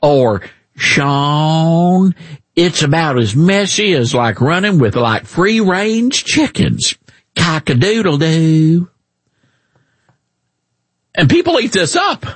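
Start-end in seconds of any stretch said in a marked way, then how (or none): 0.8-8.9 exaggerated put-on Southern accent. Mocking a senator's folksy TV sayings: exaggerated Southern accent imitating John Kennedy. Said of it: "talks with a really, really exaggerated Southern accent".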